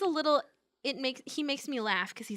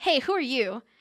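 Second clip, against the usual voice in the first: put-on snarky voice. Retelling how Nero greets a stranger at the garage: snarky Nero imitation. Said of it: "he's being snarky".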